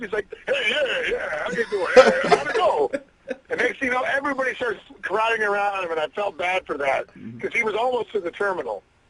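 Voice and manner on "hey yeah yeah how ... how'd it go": high voice with big, wide pitch swings. Retelling meeting a comedian at an airport: Rodney Dangerfield impression. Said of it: "through that impression".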